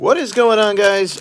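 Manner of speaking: voice cracking upward, very high. A host opens a live video on the channel; voice cracking. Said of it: "my voice just cracked so bad".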